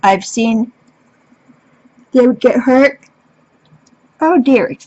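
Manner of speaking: speaking through a yawn. Describing how his own Sasquatch react when one gets hurt, yawning. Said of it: "excuse me, I'm yawning".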